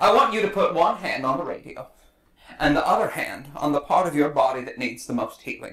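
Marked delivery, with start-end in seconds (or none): none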